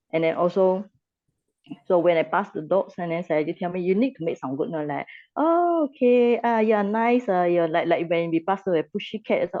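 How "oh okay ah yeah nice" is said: friendly, sweet, high, drawn-out voice. Explaining how to greet a cat when passing animals: friendly voice to a cat. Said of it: "like your voice is friendly".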